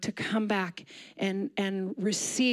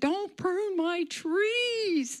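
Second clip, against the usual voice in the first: shrill, very slow cry, "trees" stretched; 11 semitones higher than usual. Retelling a scream at a husband pruning trees: retelling own past scream. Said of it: "I came out and I screamed".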